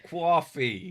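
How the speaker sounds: put-on "coffee" in a loud, high New York accent. Listing American accents in conversation, saying a word in a New York accent. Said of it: "and then there's the New York one".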